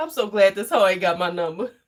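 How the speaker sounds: plain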